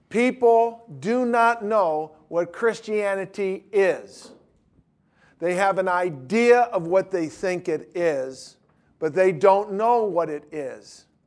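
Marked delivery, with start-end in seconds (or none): 0.1-4.3 emphatic, every word hammered home. Speaking to listeners so they don't miss this, raised voice, emphatic. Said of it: "I'm saying this with a raised voice and with emphasis".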